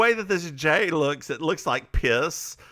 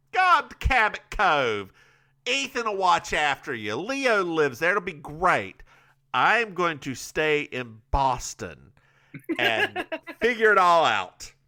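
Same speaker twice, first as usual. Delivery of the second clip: ridiculous put-on delivery, swooping and drawn out. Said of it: "The way you did that".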